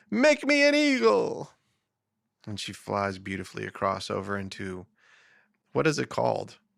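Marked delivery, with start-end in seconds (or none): 0.1-1.5 acted, very high, shrill, stretched-out scream. Telling a joke, quoting a woman who jumps off a cliff: imitating a scream. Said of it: "she jumps off and she screams".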